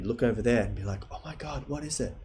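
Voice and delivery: creepy whisper. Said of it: "But all whispering".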